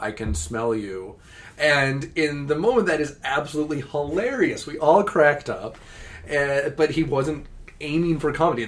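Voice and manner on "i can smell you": put-on deadpan flat robot voice. Retelling how a man voiced a killer robot that smells people, deadpan robot voice. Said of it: "he just says in his best deadpan robot voice".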